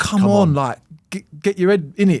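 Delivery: high-pitched, yelled scream. Retelling how a friend in the crowd screamed encouragement: imitating a friend screaming. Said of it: "screaming at me as if to say".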